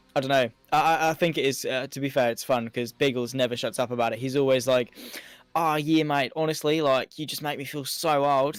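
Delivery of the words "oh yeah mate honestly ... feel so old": awful, clumsy put-on Australian accent. Imitating how Biggles always talks: awful Biggles Australian accent. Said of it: "that was my awful attempt at an Australian accent".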